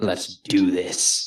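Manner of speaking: odd, slow, drawn-out dramatic delivery. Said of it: "why do you have to say it like that".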